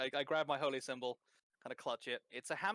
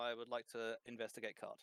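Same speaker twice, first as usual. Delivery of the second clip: plain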